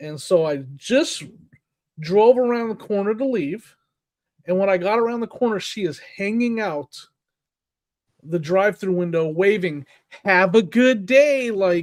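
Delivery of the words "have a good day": high, drawn-out, mock sarcastic, insincere tone. Retelling a drive-through worker waving goodbye: imitating a sarcastic tone.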